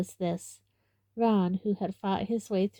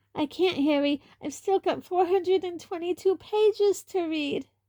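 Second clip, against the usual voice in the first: very high-pitched, slightly frantic, slightly hysterical; 11 semitones higher, 3 dB louder than usual. Reading a story aloud, voicing a character refusing food: slightly hysterical. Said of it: "now sounding slightly hysterical".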